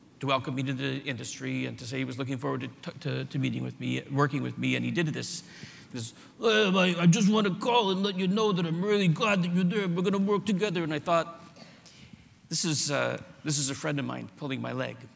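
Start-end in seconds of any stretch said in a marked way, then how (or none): 6.4-10.8 put-on loud, high, thick, grotesque New Jersey accent. Retelling a welcome phone call from a man in the industry, in a grotesque new jersey accent. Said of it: "he had this grotesque New Jersey accent".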